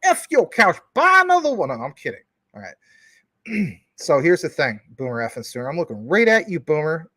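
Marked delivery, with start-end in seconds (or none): 0.0-1.7 very high, loud, punched-out comic delivery. Trash-talking the person being addressed, in a Dave Chappelle impression. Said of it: "let me say this like Dave Chappelle".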